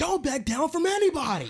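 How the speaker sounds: very high-pitched hollering coach yell. Retelling a scene where a line coach yells at linemen: imitating a coach yelling. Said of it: "yelling at them".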